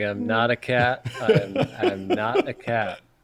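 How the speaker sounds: put-on grave, slow insistence. Retelling a lawyer stuck with a cat filter: imitating a dead serious tone. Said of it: "just dead serious".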